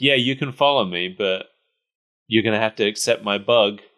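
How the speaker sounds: plain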